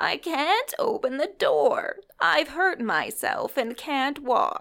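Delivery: quavering, high-pitched voice. Narrator reads an injured woman's reply through the door to Nancy: quavering voice. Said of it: "Then the quavering voice replied".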